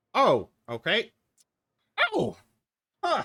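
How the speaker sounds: put-on very high, slow, drawn-out old man voice. Playing an old man asking a helper about his new phone: old man voice. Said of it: "I got this fancy new phone here. / You broke the old man's heart. / have you ever talked to an old person? You broke the old man's heart".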